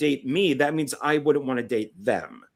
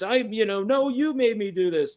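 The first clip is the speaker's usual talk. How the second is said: mock screaming, higher pitch; 7 semitones higher than usual. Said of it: "just screaming at each other".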